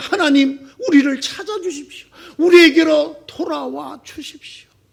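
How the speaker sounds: imploring, earnest pleading tone. Retelling a prayer to God: imitating a pleading prayer. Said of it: "하나님에게 애원합니다".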